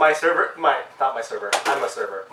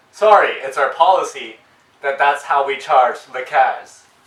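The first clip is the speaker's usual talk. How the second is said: normal talking voice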